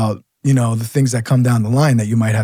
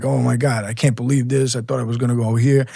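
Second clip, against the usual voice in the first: put-on scared, panicked voice; 4 dB quieter than usual. Retelling scared recruits learning where they were sent: imitating a panicked cop. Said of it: "They were shitting their pants".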